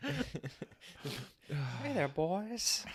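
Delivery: eerie cartoon character voice. Imitating the super creepy guy from Family Guy: creepy Family Guy guy voice. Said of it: "the super creepy guy from, uh, Family Guy".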